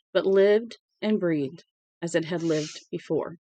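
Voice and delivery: plain reading voice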